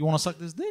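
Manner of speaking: unsure questioning tune through whole line, to "dick". Retelling his own question to a date: retelling a doubly questioning tone. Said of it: "did you say it like that?".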